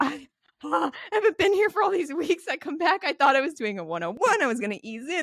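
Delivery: mock near-crying panic. Retelling missing weeks of dance class to the girls nearby: imitating own near-crying panic. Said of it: "crying, like, right now, just, like, tears in my eyes".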